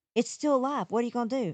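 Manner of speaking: mock, high, out of breath and panicky. Retelling how he panicked about a live bat downstairs, imitating him panicky and out of breath. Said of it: "out of breath and just panicky".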